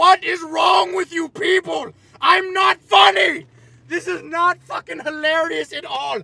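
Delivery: furious yelling, very loud and high. Ranting at a camera about having a fan club: yelling angrily. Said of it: "I'm yelling at a camera".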